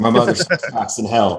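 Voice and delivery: bone-dry, dead straight, no laugh. Speaker retelling how they answered a man's joke, retelling a deadpan line. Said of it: "I looked at him deadpan and said".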